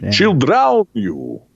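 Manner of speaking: put-on Transylvanian-sounding accent. Telling a story about a woman and her children, Transylvanian-sounding accent. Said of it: "that sounds a little bit more like uh, Romanian, Hungarian. / Very, very Transylvanian of you".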